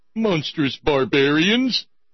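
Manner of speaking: high, very loud, belted cartoon dad yell. Rereading the last words of a quote, in a Homer Simpson voice. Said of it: "you could almost read in a Homer Simpson voice".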